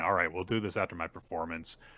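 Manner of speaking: normal talking voice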